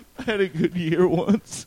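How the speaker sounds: high, slow, tearful voice near crying. Asked how he became a fantasy expert, he answers on the verge of tears. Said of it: "Don't cry, man".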